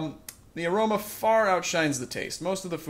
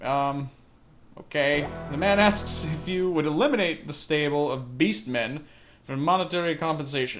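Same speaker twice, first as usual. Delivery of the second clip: ordinary delivery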